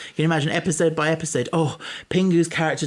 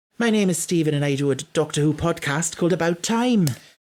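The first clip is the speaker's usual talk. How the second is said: put-on Welsh accent; 3 semitones higher than usual. Performing the same line again in a new requested accent: Welsh accent.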